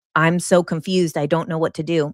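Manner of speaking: plain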